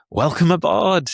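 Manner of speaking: put-on over-enthusiastic, overly eager tone, very high pitch. Speaker retells greeting a woman who must sit in the middle: mock over-enthusiastic greeting. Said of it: "like really over enthusiastic".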